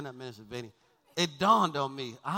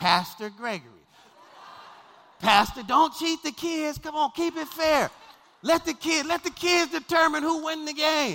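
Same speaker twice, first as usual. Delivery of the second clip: shrill, very high, loud yelling; 13 semitones higher, 7 dB louder than usual. Retelling shouting at the scorer's table during a game: retelling own yelling. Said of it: "So I'm yelling over there at the scorer's table".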